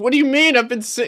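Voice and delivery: fake shouting. Answering a request for a free signal: mock yelling. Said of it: "Why are you yelling at me?".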